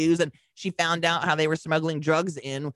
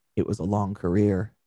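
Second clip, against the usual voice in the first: flat deadpan delivery, much lower pitch; 8 semitones lower than usual. Retelling what an interviewed man said before going in, imitating deadpan. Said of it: "Just deadpan".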